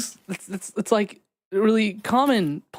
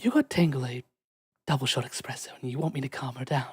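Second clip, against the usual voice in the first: very low, soft, flat deadpan delivery; 7 semitones lower, 7 dB quieter than usual. Describing Half-whisper lifting her crown to look at you, deadpan Half-whisper voice. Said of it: "look at you with like a deadpan face and go".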